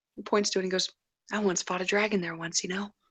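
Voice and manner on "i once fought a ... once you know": low, hushed half-whisper under the breath. Voicing a character pointing out where he once fought a dragon: low half-whisper. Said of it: "in a low whisper".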